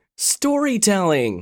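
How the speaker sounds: sudden, high, excited exclamation. Raven suddenly understands and answers his mother, exclaiming. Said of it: "he exclaimed".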